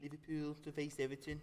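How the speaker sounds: quiet, poor put-on Liverpool Scouse accent. Reading out a football result to the others, in a bad Scouse accent. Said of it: "Now that sounds scouse".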